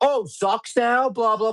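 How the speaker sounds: taunting, high-pitched scream. Recalling screaming at him after Gonzo's interception; retelling own scream. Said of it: "I screamed at him".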